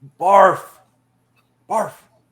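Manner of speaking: very loud, high half-shout. Playing a character up high, talking down to the others: calling down, not yelling. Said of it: "not yell down, but talk down like Barf".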